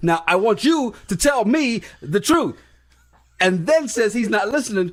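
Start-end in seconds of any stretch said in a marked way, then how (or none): 0.0-2.6 acted-out, boiling-mad, furious demanding tone. Retelling how she came in and confronted him: imitating someone very angry. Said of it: "she gets so mad and goes".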